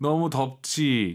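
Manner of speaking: slow, loud, sure-sounding delivery.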